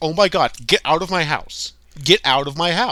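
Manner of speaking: loud, dead-straight, super blunt delivery. Retelling a character ordering people out of her house: retelling someone shouting to leave. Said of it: "where she's like".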